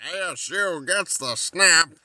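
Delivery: football play-by-play announcer voice.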